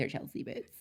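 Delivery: soft, whispered impression of a man's voice. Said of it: "Me giving him that voice".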